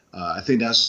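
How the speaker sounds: plain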